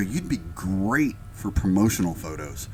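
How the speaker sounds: ordinary talk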